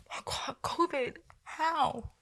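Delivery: very slow, breathy, whispered, weird mocking voice. Mocking people who go out to eat every week, in a weird voice. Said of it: "stop mocking people with those weird voices".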